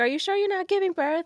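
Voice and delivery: acted screaming, pitched very high. Retelling what a nurse said in the bathroom: imitating a nurse screaming. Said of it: "screaming at me".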